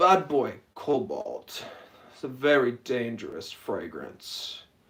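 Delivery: slow, try-hard, too-cool drawl. Imitating a fragrance reviewer, mocking his slow put-on cool talk. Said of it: "talking slow, like, trying to talk all, like, cool".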